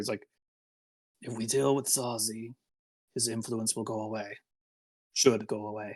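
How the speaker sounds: quiet, hushed stage whisper. Game narrator voicing a character as the party moves up, Zolbit half-whispering. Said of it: "you hear kind of Zolbit whisper".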